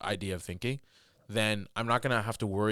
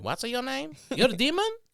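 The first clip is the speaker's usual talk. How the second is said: put-on very high-pitched old woman accent; 3 dB louder than usual. Retelling how an old woman called someone a demon: imitating an old woman's accent. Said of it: "like that old woman did to me".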